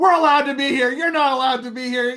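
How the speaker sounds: put-on very high, heated, angry shouting. Recounting yelling at people who ruined a film take, reenacting own angry yelling. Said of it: "I get pretty hot and start yelling at them".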